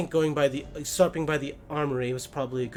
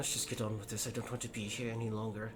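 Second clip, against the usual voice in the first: low, very quiet mutter through clenched teeth; 5 semitones lower, 12 dB quieter than usual. Voicing a character in a game scene after others chuckle, through gritted teeth. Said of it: "somewhat between slightly gritted teeth".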